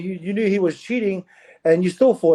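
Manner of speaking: ordinary delivery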